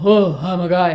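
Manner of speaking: all-out full volume, very loud voice. Showing the opposite of a mix voice: full loud voice. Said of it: "full loud voice".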